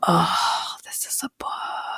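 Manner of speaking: soft, hushed, breathy, awed whisper.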